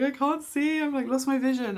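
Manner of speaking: imitated crying voice. Retelling finding the midwife after vision went: retelling own past crying. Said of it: "I was, like, crying".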